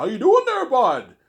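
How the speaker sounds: very high, very loud, strong hardcore Canadian accent. Describing accents out west or east in Canada: hardcore Canadian accent. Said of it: "you have a hardcore Canadian accent".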